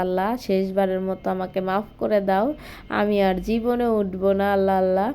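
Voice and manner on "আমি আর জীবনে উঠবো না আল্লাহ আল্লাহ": normal talking voice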